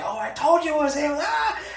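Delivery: very high, laughing, thrilled fan squeal.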